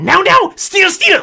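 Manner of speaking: squeaky rat-man shout. A rat man hidden in the shadows shouts at Atilka, strange squeaky rat-man shout. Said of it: "a strange squeaky voice from the shadows shout".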